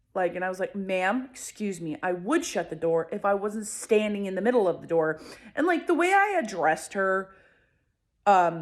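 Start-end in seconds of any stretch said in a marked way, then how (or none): none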